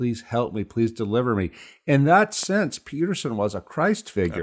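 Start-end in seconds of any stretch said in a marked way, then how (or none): 0.0-1.5 put-on crying, tearful voice. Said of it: "he ran to Peterson saying".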